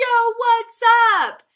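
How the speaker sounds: very high, full-volume group holler. Retelling how campers answer the call: imitating campers shouting. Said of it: "as loud as they can".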